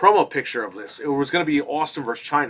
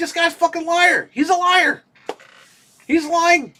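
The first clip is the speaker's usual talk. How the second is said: mock, shrill, very high yelling rant; 3 dB louder than usual. Retelling yelling in the car about a podcast guest: imitating own past yelling. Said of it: "I'm sitting there yelling while I'm driving".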